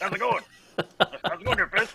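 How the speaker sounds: breathy, whispered put-on football-coach voice. Greeting the hosts and moderator at the show's start: Coach O voice. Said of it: "Is that Coach O?".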